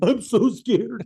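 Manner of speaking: very high, loud, tearful, blubbering crying wail. Retelling hiding in the bathroom after a threat: imitating own crying. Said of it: "crying in the bathroom".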